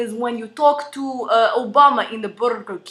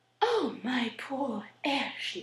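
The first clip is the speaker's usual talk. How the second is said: slow, genteel, upper-class South Carolina accent; 12 dB quieter than usual. Showing how upper-class South Carolina families talk, upper-class Southern American accent. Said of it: "if you're going to like South Carolina and you're one of those upper class families, you talk like".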